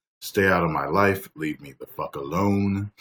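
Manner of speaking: plain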